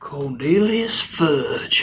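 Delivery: put-on frontier Old West cowboy voice. Saying the Minister of Magic's name: put-on Old West cowboy voice. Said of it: "an Old West cowboy".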